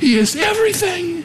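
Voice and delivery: exultant, triumphant cry.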